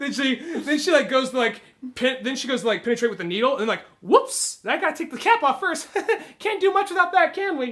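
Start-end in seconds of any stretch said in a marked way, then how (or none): 4.0-7.7 light, faint Southern twang, pitched up. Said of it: "kind of faint Southern twang".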